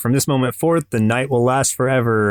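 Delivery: ordinary delivery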